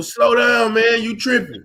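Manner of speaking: ordinary talk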